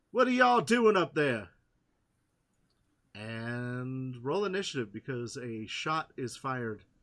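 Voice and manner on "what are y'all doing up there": shrill, high, very loud yelling. Voicing a character yelling up from partial cover: yelling up. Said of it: "And he yells up".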